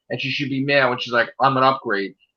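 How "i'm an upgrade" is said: mock angry, sarcastic delivery. Retelling a character's line while discussing her: imitating sarcastic anger. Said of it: "She said that sarcastically with anger".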